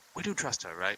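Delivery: soft, quiet half-whisper. Playing a character who quietly checks with a companion while following: half-whispering. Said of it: "just kinda whisper to him".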